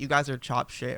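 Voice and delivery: ordinary talk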